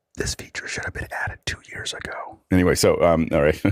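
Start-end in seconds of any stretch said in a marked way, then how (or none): 0.1-2.3 hushed whisper, much quieter. Imagining whispering into one listener's ear through a new feature, whispering. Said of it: "I'm gonna whisper in the right ear".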